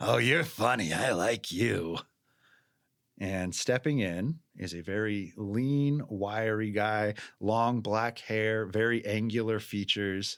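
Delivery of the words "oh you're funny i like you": hoarse rasping voice. Someone heard off to the side chimes in, in a raspy voice. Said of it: "but a raspy just".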